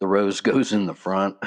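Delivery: normal talking voice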